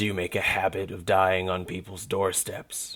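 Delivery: irritated, rumbling ancient dragon voice. Reading a story, the dragon asks the gnome a question: low, rumbling old dragon. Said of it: ""I'm a dragon. A very old, very annoyed dragon." / He ignored her invitation. / A very old, / Its low voice rumbled throughout what appeared to be a dank".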